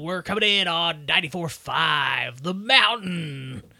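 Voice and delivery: put-on congested radio shock jock voice, "five" drawn out. Showing a shock jock radio intro, put-on shock jock voice. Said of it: "this is more like a shock jock sort of thing".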